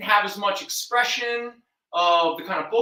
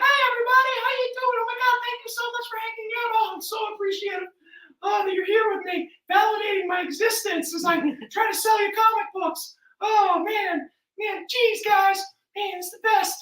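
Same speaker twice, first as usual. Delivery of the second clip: insincere, very high-pitched, chipper, fake friendly voice; 11 semitones higher than usual. Speaker acts out greeting people while selling comic books, mock high-pitched friendly voice. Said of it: "my voice like kind of gets all high".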